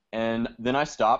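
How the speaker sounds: ordinary talk, nothing marked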